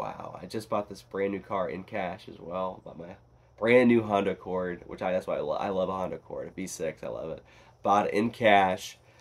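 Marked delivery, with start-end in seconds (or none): none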